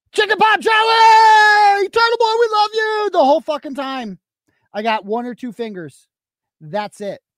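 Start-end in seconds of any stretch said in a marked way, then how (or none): 0.1-3.0 booming, very loud, very high-pitched yell. Retelling what the mailman yells when he comes by: imitating the mailman yelling. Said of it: "The mailman comes by and yells".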